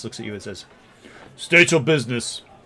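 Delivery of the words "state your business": very rough, gruff, loud orc voice. Game master voicing an orc who confronts the approaching players: very gruff orc voice. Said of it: "in a very gruff voice".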